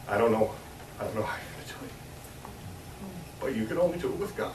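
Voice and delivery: voice getting choked up partway through the sentence. School teacher encouraging the young people about distractions, choked up. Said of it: "I get choked up".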